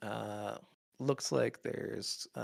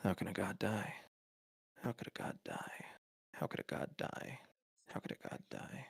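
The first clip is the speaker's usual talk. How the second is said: whispered, breathy mutter, looping on and on; 3 semitones lower, 7 dB quieter than usual. Narrating what the listeners hear from a grave philosopher as they walk by: mumbling. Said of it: "you're hearing what the mumbling is".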